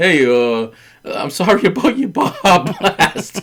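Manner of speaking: mock tearful crying, very slow and drawn-out. Retelling how the other speaker apologized to a customer: imitating someone crying. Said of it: "you're crying to a guy at the door".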